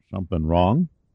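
plain reading voice

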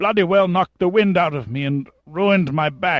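gasped out between clenched teeth. The hurt captain, Pembroke Smythe, answers Pitt after a fall, gasping through clenched teeth. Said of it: "gasped between clenched teeth".

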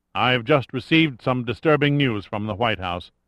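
plain

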